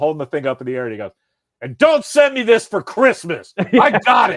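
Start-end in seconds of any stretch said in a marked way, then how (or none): 1.6-4.4 shrill, very high, full-volume holler. Retelling how someone yelled back from twenty feet away: imitating Steve yelling. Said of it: "He yells".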